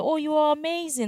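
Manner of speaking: rise-fall tune on the word amazing. Teaching how to answer a customer's compliment; rise-fall intonation. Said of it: "it's a rise fall intonation".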